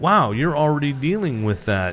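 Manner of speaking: ordinary talk, nothing marked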